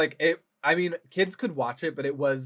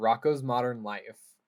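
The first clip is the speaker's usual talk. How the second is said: normal talking voice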